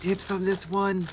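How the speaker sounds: hushed whisper. Searching a bedroom, the player's character remarks to himself, whispering to himself. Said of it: "He's gonna whisper to himself".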